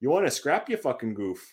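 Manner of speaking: laid-on Northern Ontario accent. Having offered to say your favorite one in the accent, do it in a Northern Ontario accent. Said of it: "I can say it in the Northern Ontario accent too".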